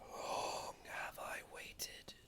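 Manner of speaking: soft whispering voice. Voicing an unseen presence calling to a barbarian climbing a hill: gentle whisper. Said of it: "You hear gently whispering".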